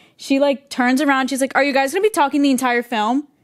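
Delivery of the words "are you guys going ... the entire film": snippy, mean-spirited, scolding tone. Retelling a stranger's complaint at the movie theater: imitating a mean tone. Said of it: "a mean tone".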